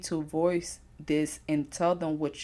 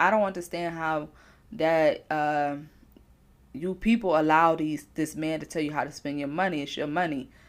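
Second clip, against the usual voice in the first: plain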